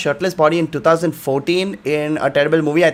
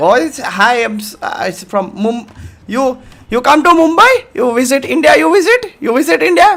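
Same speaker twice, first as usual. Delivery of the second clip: nervous, pitched-up stutter, tripping over every word; 9 semitones higher, 5 dB louder than usual. Retelling first meeting a Hollywood celebrity, acting out own stuttering. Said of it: "I'm like stuttering".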